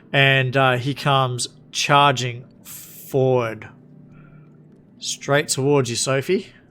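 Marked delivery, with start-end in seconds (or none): none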